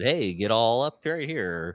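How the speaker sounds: usual speaking voice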